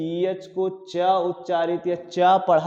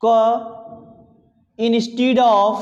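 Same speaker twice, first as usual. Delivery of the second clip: dictating delivery. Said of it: "नोट करके लिखिएगा".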